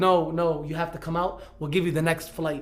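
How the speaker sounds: ordinary talk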